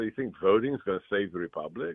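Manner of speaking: ordinary talk, nothing marked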